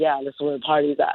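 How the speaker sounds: unhappy, flat delivery. Speaker retells how the man who brought them to a party answered, not happy-go-lucky. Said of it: "he didn't say it so like happy-go-lucky".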